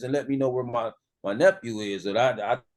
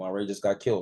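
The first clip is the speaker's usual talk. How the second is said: put-on blunt flat delivery, lower; 4 semitones lower, 3 dB quieter than usual. Retelling a cousin's phone call: imitating a blunt flat delivery. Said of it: "he said it just like that".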